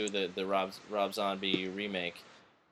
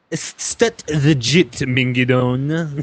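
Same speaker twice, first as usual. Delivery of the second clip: put-on Italian accent; 5 semitones higher, 16 dB louder than usual. Asked by another player for an italian impersonation, answer in an italian accent impression. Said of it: "will you do an Italian impersonation for us?".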